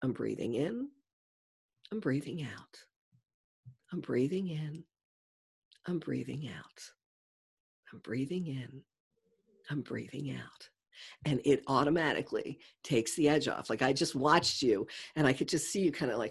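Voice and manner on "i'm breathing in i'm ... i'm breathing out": trance-like, soft, soothing, hypnotic meditation guide voice. Speaker guiding someone through a breathing exercise, hypnotic voice. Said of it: "my very hypnotic voice".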